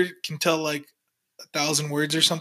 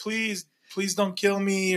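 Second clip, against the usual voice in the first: mock-pleading, higher; 4 semitones higher, 4 dB quieter than usual. Speaker retelling what a handcuffed man said, imitating someone pleading.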